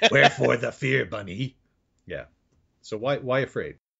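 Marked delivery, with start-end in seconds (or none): 0.1-1.6 rough, gruff cartoon beast voice. Quoting a cartoon line to someone, in a Tasmanian Devil voice. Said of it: "that's the Tasmanian devil who would talk like that".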